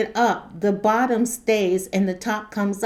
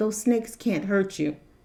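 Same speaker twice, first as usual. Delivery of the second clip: mock, very calm, even, reassuring voice; 4 dB quieter than usual. Retelling a snake scare, the speaker quotes their mother, imitating her very calm voice. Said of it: "in the most calm voice".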